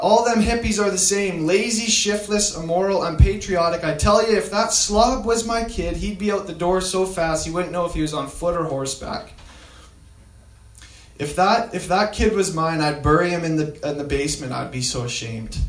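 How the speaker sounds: normal talking voice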